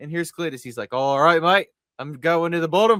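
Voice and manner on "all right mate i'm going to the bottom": loud, fake, put-on Australian accent. Retelling what Cletus said during a race, Cletus in a fake Australian accent. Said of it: "he's Australian now".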